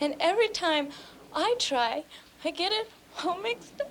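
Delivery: high, sobbing voice, crying through the words. In a drama, a character speaks to someone who calls her sweetheart, sobbing.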